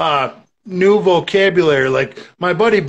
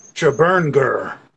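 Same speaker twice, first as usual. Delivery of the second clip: primitive caveman voice, lower; 5 semitones lower than usual. Retelling what he said while drinking by the fire, in caveman talk. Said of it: "total caveman talk".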